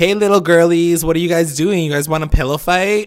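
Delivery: high, patronizing, condescending, teasing tone. Retelling what the guys said to the girls outside the diner: imitating a condescending taunt. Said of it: "they're obviously, like, condescending".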